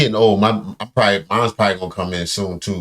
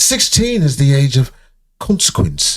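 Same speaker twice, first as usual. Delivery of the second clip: put-on thick grand British accent, slow and pitched up; 5 semitones higher, 3 dB louder than usual. Retelling what a man said, in a Game of Thrones deep British accent. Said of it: "He went deep British on it".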